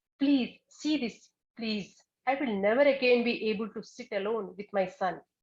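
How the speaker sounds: put-on angry, pleading voice. Retelling a woman's plea about her son Rahula, imitating an angry voice. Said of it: "she's continuing like in an angry voice".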